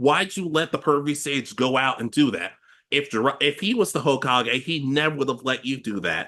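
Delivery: ordinary talk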